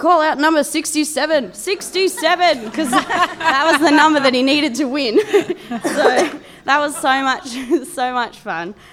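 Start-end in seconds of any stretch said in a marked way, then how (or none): 0.0-2.6 mock eager, excited, bantering yelling. Recalling a once-nervous man at bingo calling out his number, retelling his yelling. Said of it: "he was yelling".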